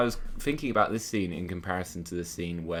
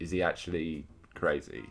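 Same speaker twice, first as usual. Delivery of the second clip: usual speaking voice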